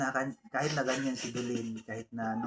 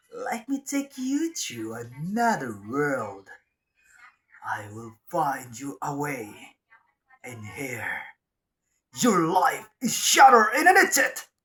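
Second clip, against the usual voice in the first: dramatic put-on game hero voice, loud and swooping; 3 semitones higher, 6 dB louder than usual. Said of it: "boses ni, ano, Dairot, kuhang-kuha ko yun".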